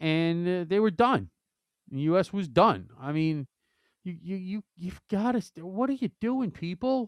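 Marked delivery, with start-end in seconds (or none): 5.7-7.1 high, frustrated, exasperated outburst. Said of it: "I can hear the frustration in your voice".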